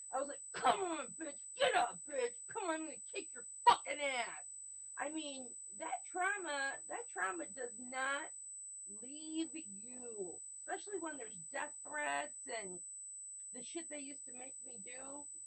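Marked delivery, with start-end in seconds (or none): 0.1-4.5 mock, fierce, angry hollering. Speaker acts out what they yelled back then, retelling own hollering. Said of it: "I'm hollering".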